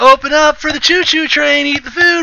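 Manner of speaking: put-on very high-pitched, coaxing baby talk. Retelling how a mom feeds a small child with a spoon: imitating a mom feeding a toddler. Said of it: "take the spoon and be like".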